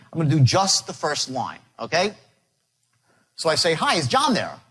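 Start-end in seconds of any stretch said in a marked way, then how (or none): 3.8-4.6 cold-call salesman pitch tone. Showing how to open a sales phone call: sales-call script tonality. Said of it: "read this script with a specific tonality".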